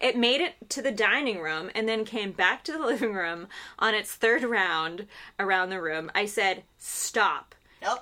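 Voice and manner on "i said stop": put-on very stern voice, much slower. Recalling ordering a drifting balloon to stop, retelling a super stern 'stop'. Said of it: "In a super stern voice".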